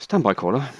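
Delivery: made-up British accent. Asking the other speaker to wait for a screenshot: put-on British accent. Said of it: "In my British accent".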